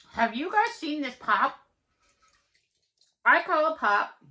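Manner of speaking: speaking with mouth full. Rating a snack to viewers, then moving on, talking with mouth full. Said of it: "Let me finish chewing".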